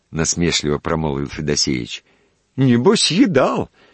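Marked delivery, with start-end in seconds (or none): 2.5-3.6 very high, boastful, show-off bragging tone. Narrator reads a man retorting to another's mockery about his food, boastful. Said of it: "хвастливо проговорил Леонтьев".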